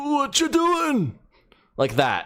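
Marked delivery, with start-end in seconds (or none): 0.0-1.2 put-on very high, extremely old voice. Trying out a character voice, making it even older, extra-old Shrek-like voice. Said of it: "I could try and make it even more old sounding".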